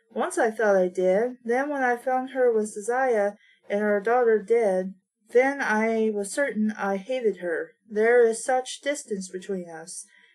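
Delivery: ordinary delivery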